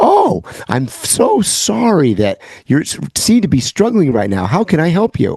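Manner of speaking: put-on canned AI assistant voice. Mocking the device's reply after being yelled at: imitating Alexa's AI response. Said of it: "your typical A I Chat G P T response".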